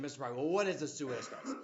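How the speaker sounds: ordinary talk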